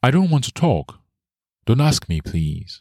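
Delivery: high-pitched pleading voice, close to tears. Narrating a woman answering Mika's question; pleading. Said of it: "she pleaded".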